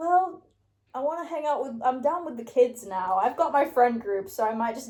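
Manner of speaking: ordinary talk, nothing marked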